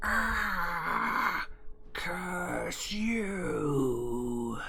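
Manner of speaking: screeching monster shriek, drawn-out ah. A game master voices a monster struck by Sacred Flame, shrieking. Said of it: "it shrieks out".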